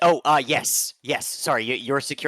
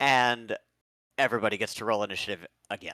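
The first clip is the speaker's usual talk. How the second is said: ordinary talk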